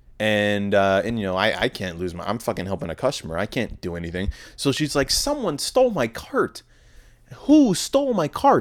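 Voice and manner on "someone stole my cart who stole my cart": very high, mad, angry, demanding cry. Retelling a lady at work saying her cart was stolen: imitating an angry woman. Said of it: "she was mad".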